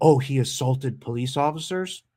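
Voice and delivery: normal talking voice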